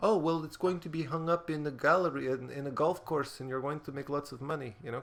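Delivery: put-on Polish accent on every word. Recalling people offering exposure for their work, the speaker quotes them in a polish accent. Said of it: "I don't know why I'm using a Polish accent".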